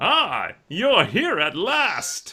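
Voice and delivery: very high, very slow swooping vampire drawl. Voicing the vampire gentleman on a balcony greeting the players: vampire voice. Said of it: "That voice".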